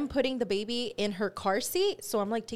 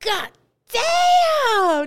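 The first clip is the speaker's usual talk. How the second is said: very loud, shrill shout, damn drawn out long; 13 semitones higher, 12 dB louder than usual. Retelling what a friend yelled in the story: retelling a super-loud shout. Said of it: "super loud".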